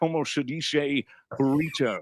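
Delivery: put-on Spanish words in a Scottish accent. Imitating a Scotsman playing a Spaniard in Highlander: Connery voice speaking Spanish.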